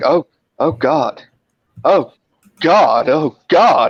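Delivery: very slow, halting, broken-up panicked voice. Retelling a woman's reaction when asked for her details, imitating her panic. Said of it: "She's like panicked".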